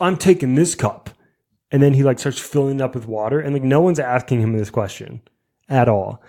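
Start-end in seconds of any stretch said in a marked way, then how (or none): 0.0-1.1 put-on man's yelling, pitched higher. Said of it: "he just starts yelling".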